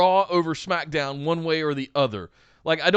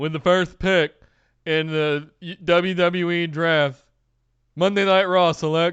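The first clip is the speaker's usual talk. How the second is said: very slow, flat, level robotic announcer drone; 3 dB louder than usual. Parody someone coming out to announce the first draft pick, in a terrible robotic Roger Goodell impression. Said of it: "some robotic douchebag come out and go".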